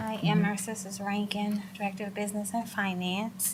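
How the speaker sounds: so soft it is barely audible, not projecting.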